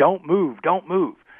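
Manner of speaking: put-on high, drawn-out screaming. Retelling a raid where a cop in riot gear screams: imitating a cop screaming. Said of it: "He's screaming at me".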